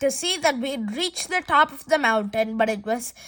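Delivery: plain reading voice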